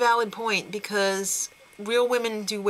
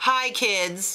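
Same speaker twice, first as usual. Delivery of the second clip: imitated New York accent. Redoing a quote after using the wrong accent, Isaac Mizrahi New York voice.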